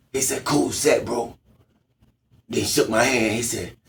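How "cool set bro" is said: street gangster manner. Retelling what a man at the bar said: imitating a gangster voice. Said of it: "He sounded like a gangster".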